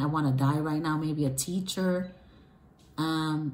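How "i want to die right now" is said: plain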